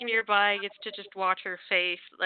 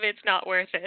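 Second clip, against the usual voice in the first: ordinary talk, nothing marked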